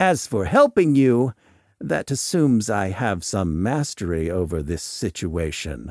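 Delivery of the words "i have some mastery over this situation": ordinary delivery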